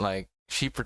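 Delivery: ordinary delivery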